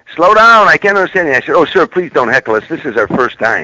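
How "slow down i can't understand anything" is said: play-acted holler, very high, shrill and loud. Retelling their first stand-up set, the speaker voices a guy in back: retelling a heckler's holler. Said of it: "some guy hollered out in the back".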